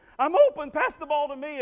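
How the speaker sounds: put-on high, loud child's scream. Retelling how second graders act in a game: imitating kids screaming. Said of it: "they'll spend the whole game screaming".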